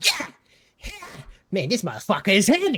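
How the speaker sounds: swooping, lively, animated squirrel voice. Voicing a squirrel struggling with a heavy gun in a tree: Bean Nut squirrel voice. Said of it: "and just kinda, like".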